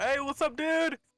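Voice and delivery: full shout. Greeting an old man met around a corner: full shout. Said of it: "I'm just gonna full shout".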